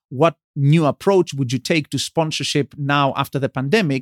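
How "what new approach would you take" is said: usual speaking voice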